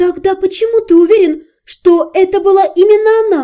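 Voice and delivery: disbelieving, incredulous tone, pitched very high. The narrator questions Vashari about the anonymous caller, incredulous. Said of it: "недоверчиво переспросила я".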